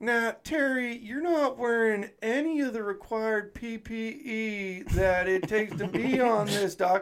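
put-on Southern accent, very high pitched. Telling a story about Alan Davis addressing Terry on the dock, imitating Alan Davis's Southern accent. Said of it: "like he's a Southern guy, so he's like".

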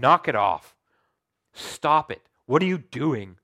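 very loud, cold, stern dad voice. Showing one way to read a scripture, like a cold father would say it. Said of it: "like a cold father would say it".

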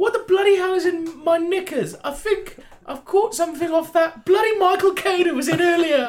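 high-pitched, poorly done regal voice. Playing a party game, talking like the Queen: imitating the Queen. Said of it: "Now begin talking like the Queen".

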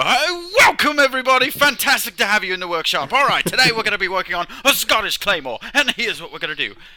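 put-on eager English accent, loud and high-pitched. Retelling how a workshop video opens: Alex Steele impression. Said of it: "when you watch enough Alex Steele and you go".

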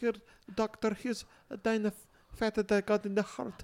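put-on Swedish accent. Describing nano ants handing fat to the doctor, in a Swedish accent. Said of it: "They have a Swedish accent".

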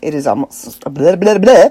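bad, fast, tongue-tied vampire voice babbling. A podcast host noting it is almost Halloween, in a poor tongue-tied vampire imitation. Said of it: "my poor imitation of a tongue-tied vampire".

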